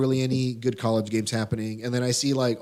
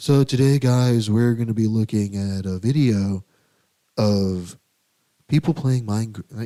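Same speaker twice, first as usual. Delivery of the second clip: slow, dull, droll deadpan commentary monotone; 5 dB louder than usual. Imitating how a man always talks to a camera, imitating a droll, boring voice. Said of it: "he talks like this".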